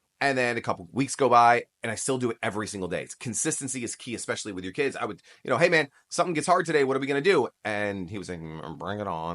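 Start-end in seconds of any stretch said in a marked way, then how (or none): 8.4-9.4 low, half-to-himself mumble under the breath. A father recounts his son's reply at drop-off, imitating muttering under breath. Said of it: "like under his breath".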